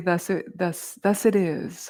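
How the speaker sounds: ordinary delivery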